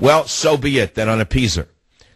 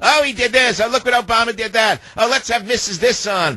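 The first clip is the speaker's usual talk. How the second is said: very high-pitched mock scream. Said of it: "A bunch of ninnies screaming".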